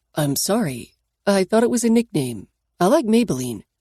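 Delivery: ordinary delivery, nothing marked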